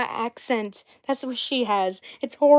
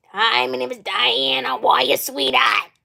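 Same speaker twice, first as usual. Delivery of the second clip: strained, throat-hurting smoker's voice. Showing how the character Diana talks: imitating Diana's voice. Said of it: "Her voice just hurts my throat".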